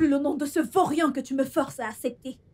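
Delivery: insolent talking back. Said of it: "Viens-tu de me parler sur ce ton?".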